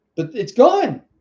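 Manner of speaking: loud ranting, yelling. Apologizing to viewers mid-rant, yelling at the camera. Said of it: "I'm yelling at the camera".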